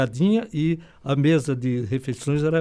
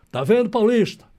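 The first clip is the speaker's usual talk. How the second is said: shout, pitched higher; 6 semitones higher, 4 dB louder than usual. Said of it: "aí ele gritou".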